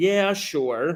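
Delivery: acted halfhearted, hesitant, unconvinced delivery. Recounting how he answered a question, the speaker imitates an unconvinced reply. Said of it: "he sounded very hesitant and unsure ... literally how he sounded".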